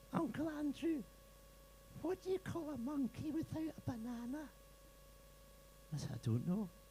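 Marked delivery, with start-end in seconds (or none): 0.1-4.4 put-on tiny, very high-pitched six-year-old child voice. Retelling a six-year-old's joke to an audience: imitating Matthew's high voice. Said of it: "It's very sort of high-pitched, almost like a six-year-old's".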